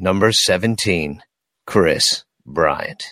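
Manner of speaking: very low, deep, sultry, sexy radio announcer voice. Announcing a number and a name: deep sultry radio voice. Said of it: "Maybe it should be a little sexy, you know, like an excitedly sexy, deep, and, you know, just kind of a radio voice".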